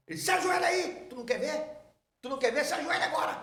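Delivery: acted-out yell. Retelling how a pastor yelled at him in front of the church, imitating the shout. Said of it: "Deu um grito comigo".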